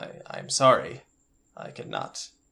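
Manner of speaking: slow, whispered, formal alien voice. Voicing an alien who tried and failed to comfort someone, formal alien character voice. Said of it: "I'm [name] of the [name] cast. / He's just like, / I'm [name] of the [name] cast".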